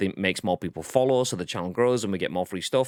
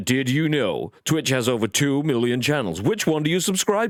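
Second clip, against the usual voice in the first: put-on American infomercial announcer voice, higher; 5 semitones higher than usual. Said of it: "which is the American sort of".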